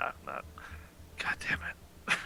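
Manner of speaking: soft, exasperated whisper with a sigh.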